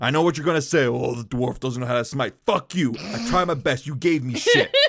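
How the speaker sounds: hostile, combative delivery. Playing a dwarf smith in a role-playing game; aggressive. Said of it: "So aggressive".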